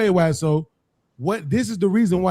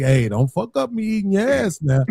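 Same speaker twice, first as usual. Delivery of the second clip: gentle, soothing, calming voice. Imitating how Mont calms women down: imitating Mont's soothing voice to women. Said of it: "talking to them in this voice like".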